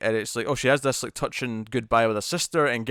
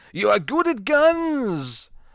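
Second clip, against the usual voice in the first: very high, swooping, ridiculous put-on Icelandic accent; 11 semitones higher, 4 dB louder than usual. Recapping a movie's action sequences, doing Owen's ridiculous Icelandic accent. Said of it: "with that ridiculous Icelandic accent, going".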